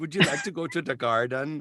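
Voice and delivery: Jamaican accent drifting into Swedish. Asked by the other speaker to do a jamaican accent, trying a failed jamaican accent. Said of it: "You sound like you're Swedish".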